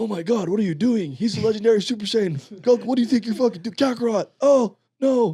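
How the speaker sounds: very high-pitched anime character voice. Retelling a scene from the first Broly movie: imitating Vegeta. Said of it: "Vegeta's like".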